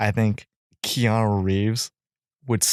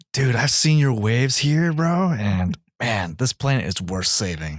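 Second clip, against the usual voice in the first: put-on, exaggerated, revved-up Californian accent. Riffing on a comic-book movie idea, the speaker does an exaggerated californian accent. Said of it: "really revs up the like the Californian accent".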